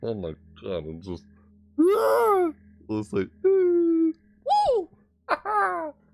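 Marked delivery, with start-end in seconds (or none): 3.5-5.9 squeaky, very high voice crack. Imitating how their own voice just cracked while saying goodbye: imitating own voice crack. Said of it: "I think my voice cracked when I did it".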